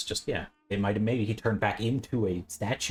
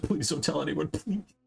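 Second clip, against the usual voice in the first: high, mock-horrified, pleading tone; 7 semitones higher than usual. Recounting a horrified character's reaction in a noir story, imitating Grimaldi begging. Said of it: "he's like begging".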